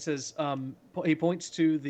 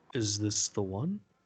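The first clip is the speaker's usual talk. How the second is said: very low, cavernous, deep put-on voice; 7 semitones lower than usual. Retelling a scene where a figure looks someone over and asks: very deep voice. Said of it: "in a voice that's deeper than I can do justice to".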